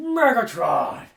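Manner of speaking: very loud, high villain bellow at full blast. Naming the bad guy in Transformers: Megatron voice. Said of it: "Megatron's like".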